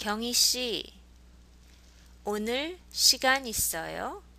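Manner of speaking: loud, with the end of 있어요 rising in pitch. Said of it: "So with a rising intonation".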